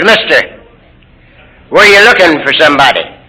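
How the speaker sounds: ordinary talk, nothing marked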